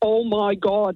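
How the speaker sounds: put-on Northern Irish Derry accent. As the cousin from Northern Ireland coming out of the other toilet, in a really thick Derry accent. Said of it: "in a really thick Derry accent".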